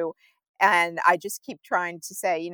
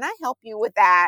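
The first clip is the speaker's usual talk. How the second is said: imitated annoyed tone; 4 semitones higher than usual. Quoting people who offer to help only when waited for, in a mock-annoyed tone. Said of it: "In a really, really kind of annoyed tone".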